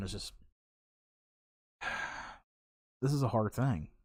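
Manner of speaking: holding back tears. Recalling children killed days before christmas, holding back tears. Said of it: "I'm not crying".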